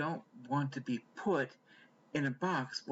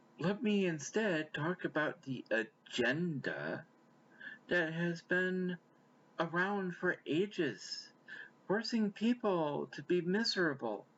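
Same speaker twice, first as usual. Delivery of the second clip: pointedly sarcastic, slow and deliberate delivery; 4 semitones higher than usual. Pushing back on talk of a transgender agenda, purposely sarcastic. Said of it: "I'm being purposely sarcastic".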